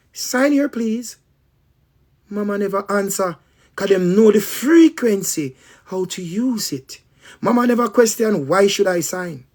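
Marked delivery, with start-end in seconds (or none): 0.2-1.2 sugary, sweet, high nurse voice. Speaker retelling how the nurse got mama to sign; imitating a nurse's sweet voice. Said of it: "the same sweet voice the nurse use".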